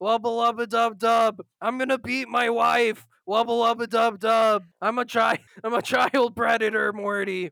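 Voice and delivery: cartoon character voice. Doing impressions for the hundredth episode: Rick Sanchez voice. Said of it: "Rick Sanchez impressions".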